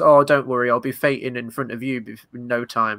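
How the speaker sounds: put-on patronizing, disingenuous, condescending tone. Retelling a cutscene where she answers Drew, imitating her condescending tone. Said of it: "she kind of condescendingly goes".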